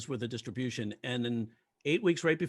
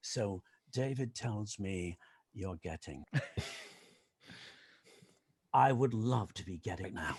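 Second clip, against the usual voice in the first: put-on British accent, low and soft; 6 semitones lower, 6 dB quieter than usual. Retelling a lunch with a writer, the speaker quotes him in a British accent. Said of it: "he had a British accent. He goes".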